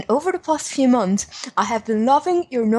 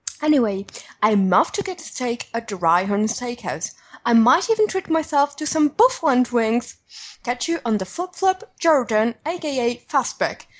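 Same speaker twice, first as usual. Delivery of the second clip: unconvincing, failed put-on British accent. Reading out a letter that signs off with a name: attempted British accent. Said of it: "this was my attempt at a British accent".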